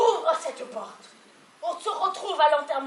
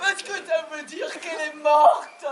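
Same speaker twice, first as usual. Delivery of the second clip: loud, wailing sobs while speaking. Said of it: "Et pourquoi tu pleures?".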